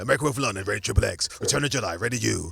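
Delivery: very low, rough, aggressive announcer voiceover. Imitating the voiceover man who rated every film in the same aggressive way, in an imitated aggressive trailer voice. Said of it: "that deep voice".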